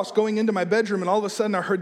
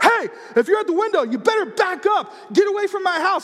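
shrill, very high-pitched screaming yell; 11 semitones higher, 4 dB louder than usual. Retelling seeing an eye at the window at night: imitating his own screaming. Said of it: "I started screaming".

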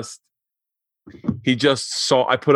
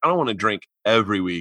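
usual speaking voice

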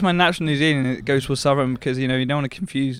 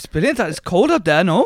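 put-on Welsh accent, higher and louder; 6 semitones higher, 5 dB louder than usual. Replying in a Welsh exchange: put-on Welsh accent. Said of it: "Hit me with some Welsh and I'll roll into it".

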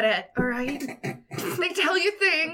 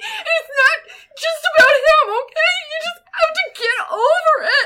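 high, raised voice, on the verge of tears; 12 semitones higher, 7 dB louder than usual. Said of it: "I'm kinda tearing up".

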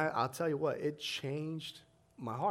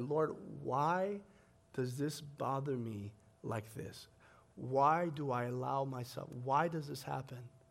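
put-on tearful voice, crying while speaking. Retelling a past prayer to God: retelling a tearful prayer. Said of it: "and I'm in tears".

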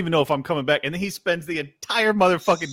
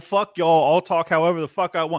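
ordinary talk

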